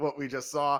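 normal talking voice

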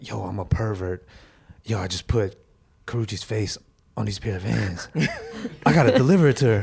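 sinister, creepy, menacing voice. Joking about what not to do, the speaker plays a pervert: creepy pervert voice. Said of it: "Your pervert voice sounds crazy in my headphones".

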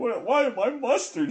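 bewildered, baffled, confused, very high-pitched voice. Retelling a guy's reaction, acting out confusion. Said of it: "so confused".

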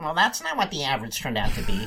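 pedantic, sing-song, nitpicking voice. Describing people nitpicking the grade average, in a nitpicking internet commenter voice. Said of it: "You have a great internet commenter voice".

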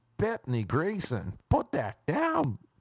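fake American accent, high and swooping. Redoing a woman's repeated order, the speaker uses a put-on American accent. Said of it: "But obviously in an American accent".

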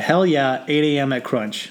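ordinary talk

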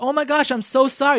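sympathetic, apologetic tone. Demonstrating what a husband should say to his crying wife, empathetic apology. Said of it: "give her a little empathy".

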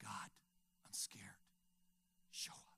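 very hushed, soft, breathy whisper. Speaker telling listeners how he prayed to god while scared: retelling a whispered prayer. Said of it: "I shared a heart cry, a whisper".

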